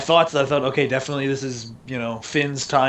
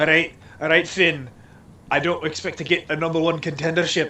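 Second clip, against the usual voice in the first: badly attempted put-on Newcastle accent; 3 semitones higher than usual. Imagine what Neville wants to say to Finn, as Neville in a terrible Newcastle accent. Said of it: "my terrible Newcastle accent".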